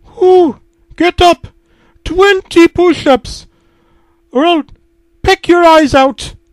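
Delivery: very high-pitched, shrill, shrieking yell. The Duolingo owl cartoon yells at the narrator, Duolingo owl yelling. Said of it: "yelled Duolingo".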